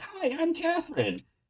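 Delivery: put-on very high, soft, squeaky little kid voice. Retelling how a new storm-chasing partner first introduced herself: imitating Catherine's squeaky voice. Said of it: "this little squeaky kid comes up and she's like".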